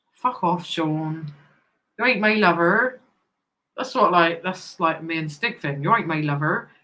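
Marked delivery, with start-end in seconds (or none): 5.8-6.7 Somerset-accented delivery. Speaker repeating an in-joke catchphrase, Somerset accent. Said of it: "That's Somerset now".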